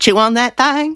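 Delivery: put-on very high, ridiculous Nashville accent with strong twang. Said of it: "in, like, an increasingly ridiculous Nashville accent".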